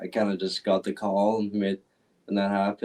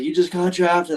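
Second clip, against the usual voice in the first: loud, high-pitched screaming; 9 semitones higher, 6 dB louder than usual. Retelling how dad shouted news from upstairs: imitating dad screaming. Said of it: "just screaming".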